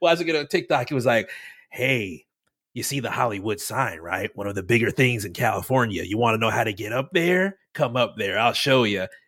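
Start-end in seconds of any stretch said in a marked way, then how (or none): 1.7-9.1 low, default app narrator voice. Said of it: "that voice you did, like, the default voice for TikTok".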